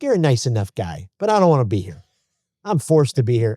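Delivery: put-on heavy, laid-on, thick New York accent. Retelling what Peter said to them at the break, in a thick New York accent. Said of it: "in a very thick New York accent".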